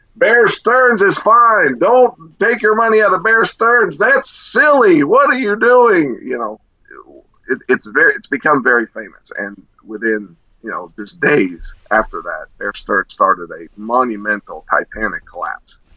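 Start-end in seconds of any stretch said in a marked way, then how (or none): 0.2-6.2 very high, shrill screaming rant. Retelling a famous TV moment: imitating Jim Cramer screaming. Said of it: "he's screaming at the T V".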